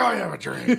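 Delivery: very high, pushed-up caricature voice. Delivering the I have a dream line as a joke: Alex Jones voice. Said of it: "Just Alex Jones voice".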